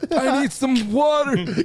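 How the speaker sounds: put-on high-pitched elderly male voice. Mimicking a guy with food stuck in his mouth, in an old man voice. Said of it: "And I'm talking like an old man".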